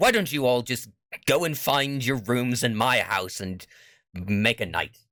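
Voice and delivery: exasperated, huffy, annoyed tone. Game master voices Mister Windsor looking back at the players, huffing. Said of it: "he huffs and he says".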